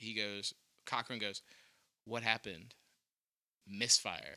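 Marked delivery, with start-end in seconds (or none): 2.0-4.4 stage half-whisper, hushed, sound dropping away. Retelling a story, acting out one man half-whispering a reply: retelling a half-whisper. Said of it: "one of them turns and just whispers".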